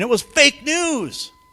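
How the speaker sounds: very high scream, every word dragged out. Retelling how Obama reacted after an election: imitating Obama screaming. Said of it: "Obama's screaming".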